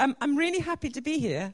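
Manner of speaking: genuinely surprised. Thanking Jenny at the start of a talk in a church, sounding surprised. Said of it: "That sounded surprised".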